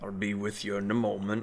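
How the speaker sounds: gruff, half-attentive grumbling. Without looking up from his hammering, he answers the five who step inside, grumbling. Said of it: "he kind of grumbles out".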